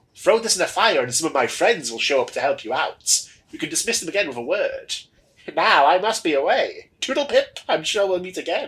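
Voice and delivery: high-pitched skeleton character voice. Narrator voicing a skeleton speaking to the orc who rescued him; skeleton character voice. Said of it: "love the voice you've given the skeleton".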